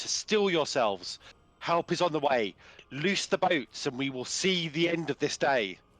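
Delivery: confident commanding voice. A character calls out to the prisoners that help is on the way: confident commanding voice. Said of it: "demo- commanding voice possible".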